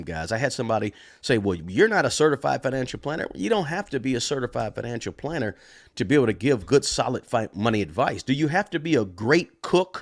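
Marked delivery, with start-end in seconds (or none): none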